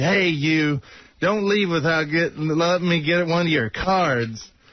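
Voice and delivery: put-on yelling. Retelling how someone in an elevator called out: retelling a yell. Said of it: "he come over and yelled".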